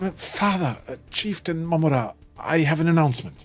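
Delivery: voice slightly cracking and breaking. Voicing a nervous young man addressing his father the chieftain: slightly cracking voice. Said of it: "with a slightly cracking voice says".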